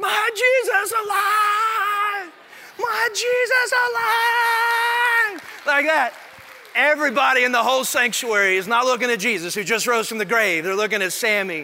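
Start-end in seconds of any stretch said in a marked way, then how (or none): 0.0-5.7 very high, slow, drawn-out scream at full volume. Retelling a little kid's reaction in the sanctuary; imitating Sammy screaming. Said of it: "He starts screaming at the top of his lungs".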